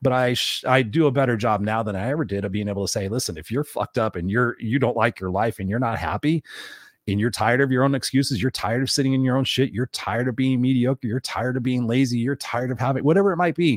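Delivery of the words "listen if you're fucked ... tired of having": plain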